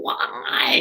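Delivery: put-on whiny, crying four-year-old baby voice. Retelling a reality show scene, imitating Kyle's crying whiny baby voice. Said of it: "in her crying, whiny, like, four-year-old baby voice".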